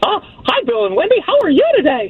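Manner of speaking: put-on cartoon mouse character voice. Asked what impression they do, a caller puts Mickey Mouse on: Mickey Mouse voice. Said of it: "I've got Mickey Mouse".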